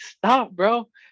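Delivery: put-on very high, frustrated screaming yell. Retelling an argument in a car at a stop sign, retelling a scream. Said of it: "and I'm screaming".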